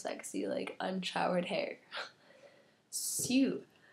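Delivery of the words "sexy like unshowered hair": whispery, barely voiced, hoarse sick voice with sore throat. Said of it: "my beautiful, sexy Tumblr voice".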